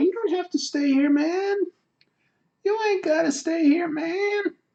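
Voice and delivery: very high put-on Kentucky accent. Talking to a viewer who wants to go to bed: Kentucky accent impression. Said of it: "slipping into my old, uh, Kentucky impression".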